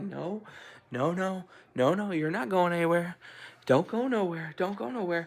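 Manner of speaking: lifted, authoritative tone. Recounting what she said to Selena, retelling raising her voice. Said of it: "Now I'm now I'm like raising my voice".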